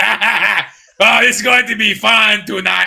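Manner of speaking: unhurried, leisurely, slow, with drawn-out laugh. Acting out the Emperor on his throne with buddies: Emperor voice. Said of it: "I don't know why the Emperor sounds like".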